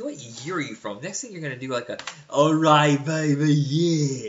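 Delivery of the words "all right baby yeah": loud, very slow drawl, lingering on yeah. Teasing the other speaker about old impressions: Austin Powers voice. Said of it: "Austin Powers".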